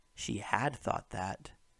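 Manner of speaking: "had" hit hard with heavy stress. Example of breaking up a contraction for emphasis: stress on had. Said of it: "we've broken it up to emphasize the had more".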